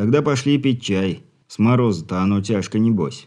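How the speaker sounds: usual speaking voice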